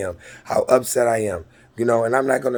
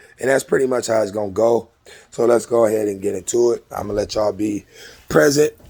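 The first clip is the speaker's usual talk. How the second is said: ordinary talk, nothing marked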